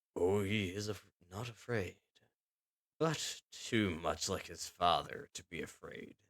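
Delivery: icy, harsh, quiet undertone. Reading a kidnapper's line about a captive boy in a story, cold, quiet voice. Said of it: "The second voice was quieter, colder, / The man with the cold voice, / The second voice was quieter, colder, / said harshly".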